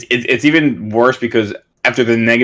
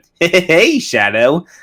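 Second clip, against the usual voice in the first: swooping, bouncy animated cartoon video-game hero voice; 6 semitones higher than usual. Describing how the game hero curses, doing the Sonic voice. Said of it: "the Sonic character voice".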